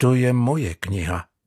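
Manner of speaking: low, quiet and firm. Narrator reads Žán standing up to the sailor over his book, quiet but firm. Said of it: "prohlásil tichým, ale pevným hlasem".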